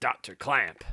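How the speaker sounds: rough gruff voice. Voicing a game character calling out to doctor clamp: gruff voice. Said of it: "This gruff voice is a little tough sometimes".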